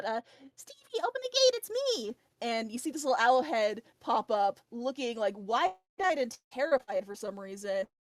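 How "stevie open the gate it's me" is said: very high, swooping, drawn-out loud call. A storyteller voices Minty as the group gets closer: Minty calling out loudly. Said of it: "Minty's gonna call out".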